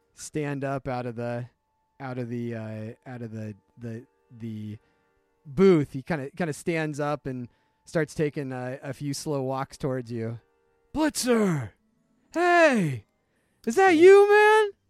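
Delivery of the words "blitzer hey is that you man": very loud, very high, rising hailing shout. Voicing a stranger walking toward a player from a booth: yelling a name across a bar. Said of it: "and he's yelling".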